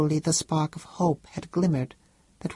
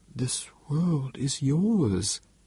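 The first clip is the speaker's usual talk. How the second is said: gentle, slow, unhurried delivery; 2 semitones lower than usual. Antioch answers the other speaker's lament; gently. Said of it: "said Antioch gently".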